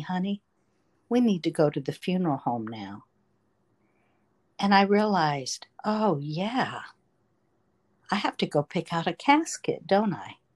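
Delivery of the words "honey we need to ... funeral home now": put-on gentle tone. Recalling what their dad said to them, quoting dad speaking gently. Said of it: "him gently saying to me".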